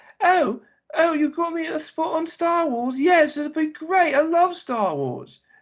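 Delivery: poor fake British woman's accent, very high-pitched. Act out an actress talking to her agent about a star wars part, in a bad british woman impersonation. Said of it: "I can't do a British woman impersonation very well".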